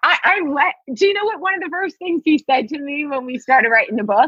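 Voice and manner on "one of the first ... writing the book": cracking up, laughing through the words mid-sentence. Recalling what a co-author first said about their book, laughing while talking. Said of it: "I'm sorry, I'm cracking up".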